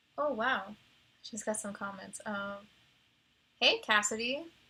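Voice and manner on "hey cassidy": booming, very loud, happy voice. Greeting a chat viewer by name: loud greeting. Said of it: "Sorry if that was too loud".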